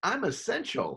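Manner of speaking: very high-pitched voice, chuckling through the words. Describing a Simpsons meme of Ralph Wiggum on the bus: chuckling Ralph Wiggum voice. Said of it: "in a chuckling voice".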